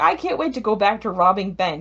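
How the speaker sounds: ordinary talk, nothing marked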